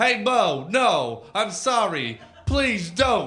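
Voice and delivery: very loud, very slow, high, drawn-out pleading. The narrator, fallen to his knees before Mo, retelling his own begging. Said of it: "I pleaded".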